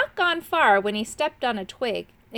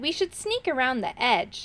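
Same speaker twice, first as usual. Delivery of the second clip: ordinary delivery, nothing marked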